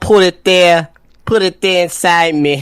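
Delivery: put-on, high-pitched Australian accent. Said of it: "you sound Australian".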